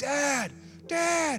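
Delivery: put-on scared child yelling. Speaker retells his four-year-old lunging at him, imitating a child yelling. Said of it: "and he's yelling".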